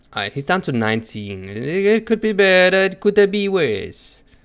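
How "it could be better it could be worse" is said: clumsy, bad put-on Italian accent, pitched up. During a game with a friend, the speaker reports progress in a bad Italian accent. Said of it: "the worst Italian accent I've ever made".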